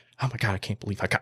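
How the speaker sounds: acted tearful shaky voice. Recalling getting a big buck after a lifetime of hunting: retelling own tearful shaking voice. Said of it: "I started tearing up. I was shaking like this".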